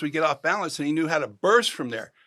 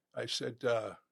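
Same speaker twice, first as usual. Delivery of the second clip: soft, low murmur. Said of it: "talk right behind their ear".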